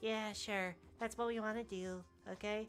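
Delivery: quiet, reserved, nerdy voice, slow and high. A voice actor showing how she voices a character: quiet, reserved voice. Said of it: "very like reserved, quiet demeanor".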